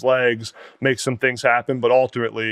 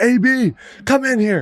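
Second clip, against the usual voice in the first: mock very high, very slow, drawn-out shout; 12 semitones higher, 3 dB louder than usual. Retelling a recruiting coordinator calling coaches down the hallway: imitating someone shouting. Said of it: "shouting down the hallway".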